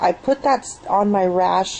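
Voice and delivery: ordinary talk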